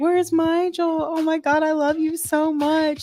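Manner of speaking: put-on acted, very high, slow, drawn-out tipsy drunken blubbering. Retelling a drunk FaceTime call to a new boyfriend, imitating drunken crying.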